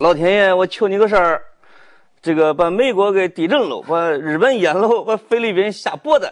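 put-on Henan dialect accent. Retelling a shirtless Puyang internet celebrity praying with incense in a field: Henan dialect. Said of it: "用河南话".

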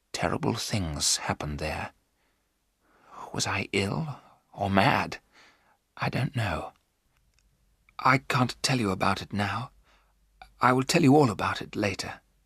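hushed whisper. Narrator voicing Jonathan as he answers Mina's questions, whispered. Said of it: "Jonathan whispered".

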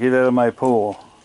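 territorial-sounding animal voice. Speaking for an animal that wants the big one out of its pool: voicing an animal. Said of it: "That's what he's saying to the big fella".

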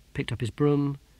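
ordinary delivery

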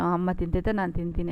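plain

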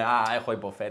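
normal talking voice

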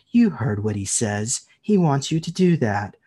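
cold, chilly, hushed and soft voice. Retelling what another lady standing there said, in a cold, soft voice. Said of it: "the cold, soft voice says".

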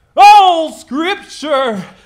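televangelist preaching, very high, loud, booming, shrill. Asked to read scripture aloud, a speaker tries it like a televangelist: televangelist voice. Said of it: "read it more like one of those televangelist guys".

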